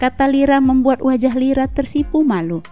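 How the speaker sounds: ordinary delivery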